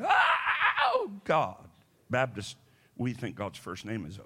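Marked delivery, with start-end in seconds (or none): 0.0-1.7 put-on very high, swooping, sing-song hollering. Retelling a prayer meeting, imitating a woman hollering. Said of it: "Sister Gillicuddy was hollering".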